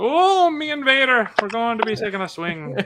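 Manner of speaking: put-on loose Irish-sounding accent. Retelling a clip of Ewan McGregor speaking: imitating Ewan McGregor's accent. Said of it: "Ewan McGregor in his little accent".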